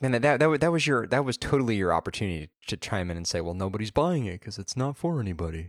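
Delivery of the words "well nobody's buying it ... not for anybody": gloomy, mopey donkey voice. Suggesting what the other speaker could have chimed in to say, in an Eeyore impression. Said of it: "that sounded like an impression of Eeyore".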